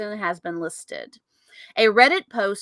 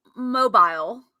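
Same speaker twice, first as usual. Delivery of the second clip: British accent and pronunciation. Showing how the word changes from american to british, in a british accent. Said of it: "It went from American to British".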